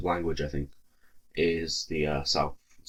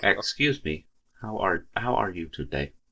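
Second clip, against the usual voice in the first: mock robotic, computer-like American accent; 4 semitones higher, 3 dB louder than usual. Showing how americans sound, mock computer-like american accent. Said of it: "That'd be the American accent".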